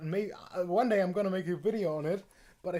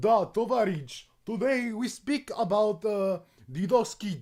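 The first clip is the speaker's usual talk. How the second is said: fake Russian accent, slow and leisurely; 2 semitones higher, 4 dB louder than usual. Talking about how hard accents are and slipping into one, mock Russian accent. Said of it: "Italian and Russian are kind of weirdly close".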